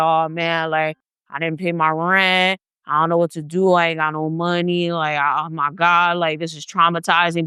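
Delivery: level, dry, hinting hard-luck tone. Imitating people who hint for money: imitating someone dry begging. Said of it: "She was basically dry begging".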